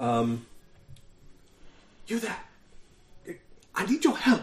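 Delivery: stage whisper, called out. Narrator voices someone calling down from a tower to the listener, in a shouted whisper. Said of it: "in sort of a shouted whisper".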